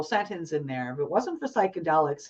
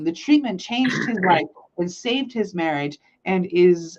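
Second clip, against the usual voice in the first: normal talking voice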